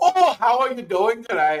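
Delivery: mock, put-on Irish accent. Mocking how someone from the Northeast talks, in a mock Irish accent. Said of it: "Irishman off the boat".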